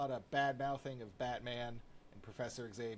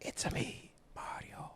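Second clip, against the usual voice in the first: whispering. Asked to whisper video game lines, whispering a video game line. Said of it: "whispering video game lines".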